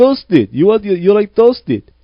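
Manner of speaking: very high, loud, awful put-on Russian accent. Retelling how a man repeated his question to customers, the speaker imitates his awful russian accent. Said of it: "he had an awful Russian accent".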